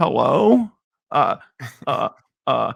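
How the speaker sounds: put-on scared voice. Retelling starting to pitch on calls, acting out a scared voice. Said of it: "I was so scared. My voice".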